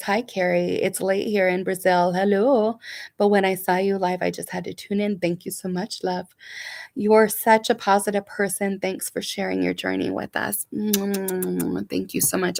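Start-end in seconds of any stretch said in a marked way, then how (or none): none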